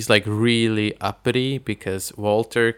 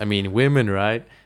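usual speaking voice

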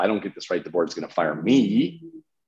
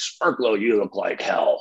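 rough, gruff coach voice. Retelling walking into a bar and being greeted by coach Bill; imitating Bill's gruffy voice. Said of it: "Like literally that voice".

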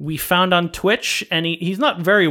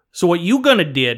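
put-on Cajun accent, man's voice. Imitating a TV cooking host, the talk says a very Cajun man: Cajun accent. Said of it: "he never says the word do".

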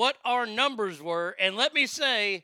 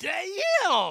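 higher-pitched, gritty voice; 5 semitones higher than usual. Quoting a girl's reply, says "damn" in the Chris Tucker voice. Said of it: "in the Chris Tucker voice".

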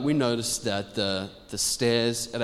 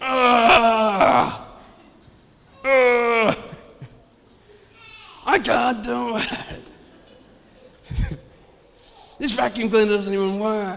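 put-on very high, drawn-out, growling frustrated kid voice; 12 semitones higher, 7 dB louder than usual. Retelling how a child complained while vacuuming the stairs: imitating a child's frustrated growling. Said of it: "his little voice going".

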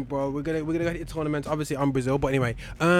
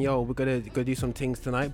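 ordinary talk

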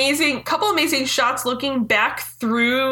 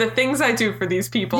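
plain

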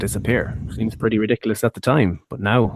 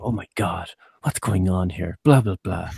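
alarmed, fretting ringside announcer voice, very worried. Recapping a double power bomb, imitating the commentators' very worried voice. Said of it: "the commentators did their very worried voice".

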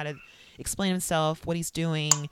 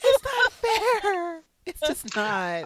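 very high-pitched, frantic, loud yelling; 13 semitones higher, 6 dB louder than usual. Retelling yelling at the tv during a show: imitating own yelling. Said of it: "I just started yelling".

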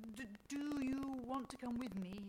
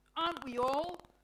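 very loud, cutting, sharp delivery; 4 semitones higher, 9 dB louder than usual. One character replying to another's remark, sharply. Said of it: "Mother Nature says sharply".

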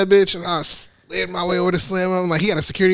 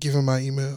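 put-on whisper, lower and quieter; 5 semitones lower, 6 dB quieter than usual. Retelling meeting Slim at a loud party, imitating Slim's whisper. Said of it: "he's whispering the whole time".

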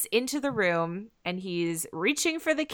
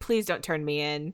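put-on pleading, lower, quieter, faster; 5 semitones lower, 6 dB quieter than usual. Speaker recaps a story, acting out Steve's line, imitating Steve begging. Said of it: "so Steve is begging".

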